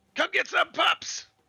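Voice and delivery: very high, very loud, shrill, full-throated in-character scream. Voicing a character who teeters on the edge while held back: screaming in character. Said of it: "screaming out at him".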